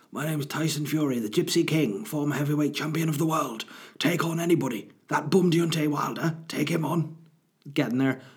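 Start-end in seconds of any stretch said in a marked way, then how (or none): 0.1-7.1 husky voice, pitched higher. Describing a husk in his voice, then speaking like him: Tyson Fury voice. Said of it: "He's got a husk in his voice. And he speaks like this".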